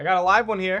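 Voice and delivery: calling out loudly. Holding a weapon to a captive's throat, calling to the party: shouting to the party. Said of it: "I just shout out to my party".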